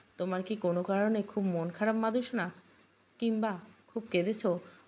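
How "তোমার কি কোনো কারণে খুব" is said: ordinary delivery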